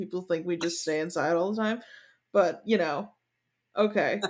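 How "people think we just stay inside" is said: ordinary delivery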